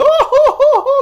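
put-on very high, very loud, very slow taunting sob. Retelling a movie scene, imitating Pennywise mocking a crying kid. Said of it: "mocking him".

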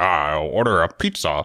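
low voice with chewing. Showing the others your own version after they tried theirs, a Joker impression, as if chewing. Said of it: "You want to hear mine?".

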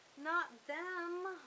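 very high, squeaky cry. Mona reacts as Floyd spots Leona and her friends, squeaking. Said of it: "Mona squeaked".

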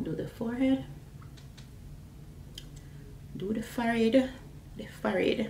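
"forehead" said with Jamaican accent.

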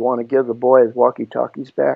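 hushed, even, held-back low quiet voice. Retelling how a man warned two bigger guys: imitating a low quiet voice. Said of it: "in a low voice, quiet voice".

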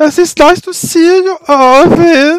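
put-on very high, shrill, loud, timid German accent. A character greets the new arrival, in a shy German accent. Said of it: "that's my shy German voice".

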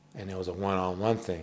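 ordinary talk

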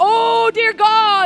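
put-on archaic, weird, old-fashioned intoning. Mocking people who pray in Old King James style: mocking an Old King James prayer. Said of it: "goes into Old King James".

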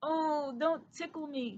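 squeaky, high, drowsy mouse voice. Reading a bedtime story, the narrator voices Christopher squeaking in his sleep. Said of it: "he squeaked in his sleep".

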